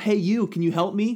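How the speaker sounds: high, loud shouted call.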